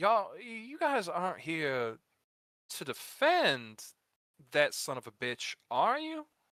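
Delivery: tin-can funnel voice, very slow and drawn out. Voicing someone heard through a tube in a fight: talking through a funnel. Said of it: "like somebody's, like, talking through, like, a funnel".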